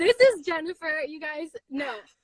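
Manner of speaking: moved, emotional voice, close to tears. Introducing her guest jennifer to viewers, emotional, near tears. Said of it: "I'm getting emotional".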